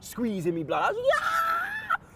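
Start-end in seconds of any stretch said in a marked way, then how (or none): 1.0-2.0 very high-pitched joyful scream. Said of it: "high pitch beyond belief".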